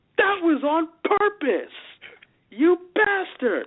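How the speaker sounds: high, slow, mock accusing tone. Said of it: "And I'm like".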